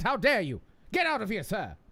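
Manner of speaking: classic put-on mid-Atlantic accent. Answering a chat comment about their accent attempt: put-on transatlantic accent. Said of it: "classically trained to speak in the transatlantic accent".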